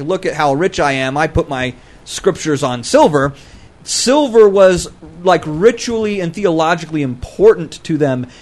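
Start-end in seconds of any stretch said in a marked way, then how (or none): none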